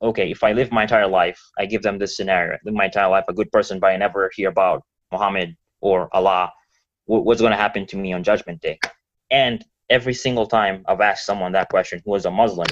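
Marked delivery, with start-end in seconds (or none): none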